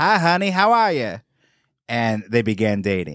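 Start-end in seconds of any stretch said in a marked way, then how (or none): 0.0-1.2 cowboy-style Western twang, pitched up. Speaker retells how a man greeted a woman the next time they met, in a western twang. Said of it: "he greeted her with a Western twang".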